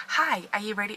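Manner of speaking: hollow, fake, passionless put-on presenter voice. Imitating the way of talking in own past videos: fake, passionless video voice. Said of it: "it was so fake".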